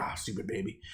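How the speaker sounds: play-acted annoyed, frustrated, hushed whispered grumble. Retelling a brother's reaction while feeding his baby: imitating frustration.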